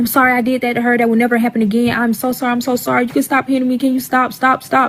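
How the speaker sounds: put-on screaming, pleading. Retelling a close friend's apology while the husband hit him, imitating him screaming. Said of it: "Like he's screaming".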